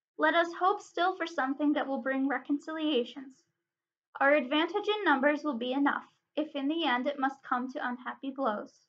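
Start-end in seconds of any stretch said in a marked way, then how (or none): none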